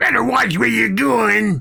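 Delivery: angry dwarf character voice. Voicing a dwarf who pushes past the players: angry dwarf voice. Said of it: "stocky, angry-looking dwarf".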